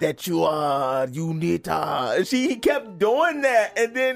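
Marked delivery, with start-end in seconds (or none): 0.0-2.2 imitated, put-on Japanese accent. Retelling a movie scene, imitating John Michael Higgins' Japanese accent. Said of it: "this a-, Japanese accent".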